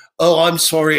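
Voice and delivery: bad, horrible put-on British accent. Calling a man back and pretending, in a horrible fake british accent. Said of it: "I do this horrible British accent that I'm trying to fake".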